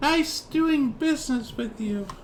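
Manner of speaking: very high-pitched, unexpected put-on voice. Describing a scene, voicing the boss man as you leave: high-pitched voice. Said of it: "like a high pitched uh, voice".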